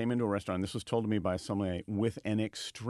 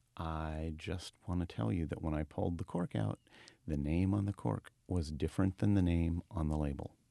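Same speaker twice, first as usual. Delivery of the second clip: put-on whisper, lower pitch; 4 semitones lower than usual. Retelling what a sommelier said into a guest's ear: imitating someone whispering. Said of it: "he whispered in the gentleman's ear".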